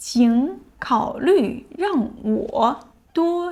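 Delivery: slow, careful reading voice.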